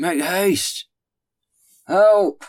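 very loud, very high, strained, muffled shriek. A voice cries out to the men raising the cart, stifled cry. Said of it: "a stifled voice crying".

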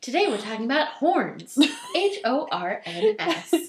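put-on playful children's TV presenter voice. Spelling out the topic as a joke: mock children's tv host voice. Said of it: "like a children's T V show".

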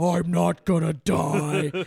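very slow, loud demonic drawl. Retelling the sister after a deep hit: imitating a demonic voice. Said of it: "her voice sounded demonic".

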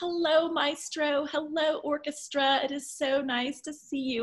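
put-on high, slow, drawn-out voice with light Southern accent. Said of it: "in her delightful voice with a little bit of a hint of a Southern accent".

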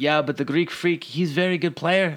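put-on Dominican accent drifting into Russian accent. Retelling what the guy at the front desk said, imitating a Dominican accent. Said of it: "my Dominican accent sounds no, that, Russian".

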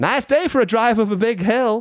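very high, piercing, friendly holler. Describing greeting a neighbor three doors down from his parked car: retelling a shout. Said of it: "I shout".

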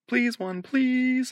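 voice pushed up very high. Reading aloud a memoir, the narrator repeats a plea alone: high-pitched voice. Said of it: "I said in a high-pitched voice".

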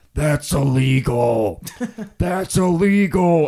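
strange, weird-voiced, loud, drawn-out screech. Retelling a bonfire story as a woman takes pictures: imitating Jason screaming, weird voice. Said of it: "Jason is screaming".

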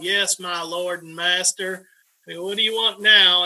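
Mississippi drawl. Speaker quotes the woman who took care of him, imitating her Mississippi drawl. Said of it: "she'd come in with her Mississippi drawl".

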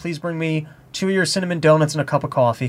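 normal talking voice

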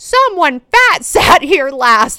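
very loud acted delivery. Retelling what the speaker's grandma said in a restaurant booth, retelling a loud remark. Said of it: "she'd just say really loudly".

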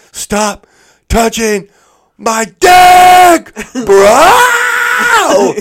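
blood-curdling shriek, very high, very loud, drawn out. Retelling a fight, acting out one guy's blood-curdling scream. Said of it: "the most blood-curdling scream".

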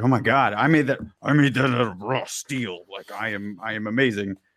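normal talking voice

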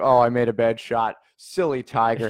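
ordinary talk

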